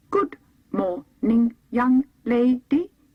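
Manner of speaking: booming, slow, loud, polite clockwork-man voice. Narrating a wound-up copper man greeting the young lady: slow, polite mechanical voice. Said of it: "he said politely in a slow, mechanical voice".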